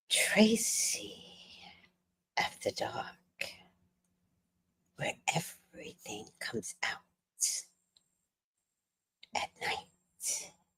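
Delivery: slow, drawn-out, hushed whisper. Performing a line after a viewer asks for a whisper: whispering. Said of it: "Should I whisper some more?".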